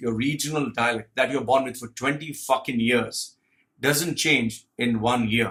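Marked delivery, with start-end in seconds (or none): none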